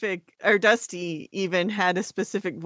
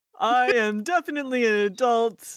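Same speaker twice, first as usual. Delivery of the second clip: child's put-on grown-up voice; 4 semitones higher than usual. Voicing a character for the group, Vincent Adultman voice. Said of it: "his Vincent Adultman voice".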